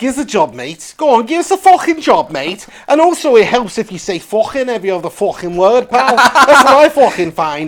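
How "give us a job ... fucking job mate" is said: put-on exaggerated Scouse Liverpool accent. Showing the one accent he can try, the speaker goes: exaggerated Scouse accent. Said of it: "the fucking Scouse accent".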